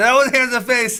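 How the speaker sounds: high, loud yelling.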